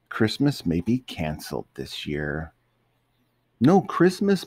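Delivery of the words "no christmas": shrill, very high, loud crying out. Mater reacts to the news that Christmas may be canceled, crying out. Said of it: "Mater cried".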